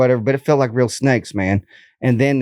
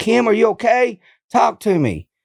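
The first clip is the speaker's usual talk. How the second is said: put-on, shrill, very high screaming; 10 semitones higher than usual. Blindfolded in darkness, retelling calling out to Kim; imitating own past screaming. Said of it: "So I was screaming in the complete darkness".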